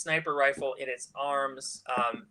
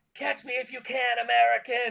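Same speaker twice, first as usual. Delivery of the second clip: very high shout with a rough edge; 10 semitones higher, 3 dB louder than usual. Voicing a sniper taunting from a dirt bike while shooting: yelling. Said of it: "And he yells out".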